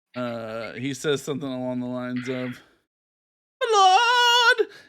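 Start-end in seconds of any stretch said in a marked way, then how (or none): 3.7-4.7 pitiful, shrill, very high and louder pathetic voice. Retelling what a character says, the speaker puts on a pathetic voice. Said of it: "he sounds real, uh, pathetic".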